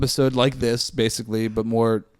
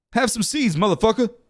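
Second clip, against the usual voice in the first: very high-pitched, shrill yelling; 11 semitones higher than usual. Imagining a movie scene, imitating Samuel L. Jackson yelling. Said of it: "Samuel L. Jackson just, just yelling".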